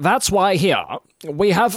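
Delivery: radio-announcer mid-Atlantic accent. Explaining the old radio accent, demonstrating a transatlantic accent. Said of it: "So you have to talk like this".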